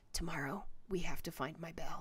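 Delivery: faint, low whisper, almost inaudible. Narrator reads a character's line, lowering it to a barely audible whisper. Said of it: "Wraith lowers his voice to a barely audible whisper".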